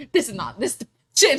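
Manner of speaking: chronic complainer's griping grumble. Retelling how an old coworker complains about the store: imitating Sheila's way of talking. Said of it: "She talks like this".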